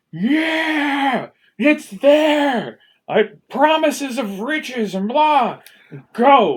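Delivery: yelling out with excitement. Voicing a father who spots a building on the cliffs: screaming with excitement. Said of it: "And your father cries out, screaming".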